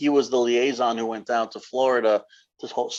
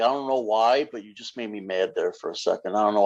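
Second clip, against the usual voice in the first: acted, dry, expressionless deadpan, flat monotone; 2 semitones lower, 4 dB quieter than usual. Retelling Kuklinski's interview answer to the interviewer: imitating Kuklinski, deadpan.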